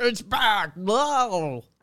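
high, amazed, awed voice with stretched-out "whoa". Imagining the real jacket coming back out: Adam Simber impression. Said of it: "That's my Adam Simber impression".

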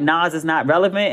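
ordinary talk, nothing marked

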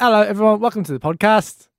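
put-on English accent. A host opens a podcast where everyone picks an accent, fake english accent. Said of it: "I'll do English".

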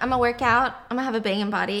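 usual speaking voice

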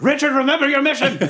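very high, drawn-out shout. Playing a character at a feast, calling across the room: yelling in character. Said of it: "And then I yell from the back of the room".

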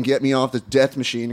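ordinary talk

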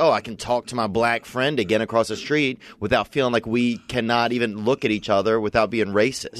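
ordinary talk, nothing marked

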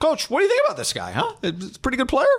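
high, hopeful, eager, fan-like enthusiasm. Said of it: "And I would say".

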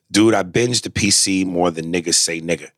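plain

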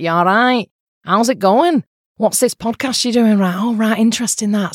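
Manchester (Mancunian) accent. Speaker who lived in Manchester shows how people there talk, Manchester accent. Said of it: "a real Manchester accent's like that".

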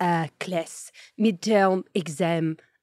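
put-on French accent, very slow. Retelling a video of a French exchange student: imitating a French exchange student. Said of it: "he imitates a French exchange student".

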